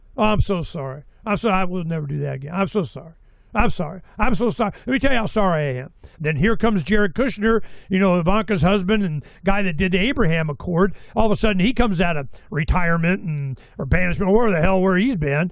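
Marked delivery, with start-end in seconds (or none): 0.2-5.9 mock over-the-top remorseful tone, lower. Retelling a phone call after being told to apologize: imitating Netanyahu apologizing.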